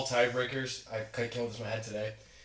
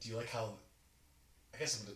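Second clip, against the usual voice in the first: very soft whisper. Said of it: "Why are you whispering?".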